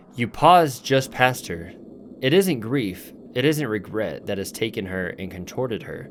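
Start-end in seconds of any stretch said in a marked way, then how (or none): none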